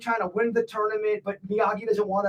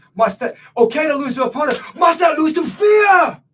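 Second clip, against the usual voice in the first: very intense, raised delivery, pitched up; 6 semitones higher, 11 dB louder than usual. Correcting a co-host who butchered the movie line, imitating intense Karate Kid III delivery. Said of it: "He says it very intense".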